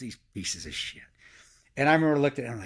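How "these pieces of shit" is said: put-on muttering under breath, lower, quieter. Retelling what a companion said about signing non-disclosures: imitating muttering under breath. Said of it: "He said under his breath".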